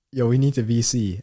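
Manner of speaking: ordinary talk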